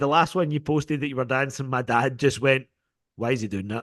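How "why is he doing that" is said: put-on stern voice, lower and quieter. Retelling the dad's reaction to a dancing video: imitating dad's stern voice. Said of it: "Just such a stern voice".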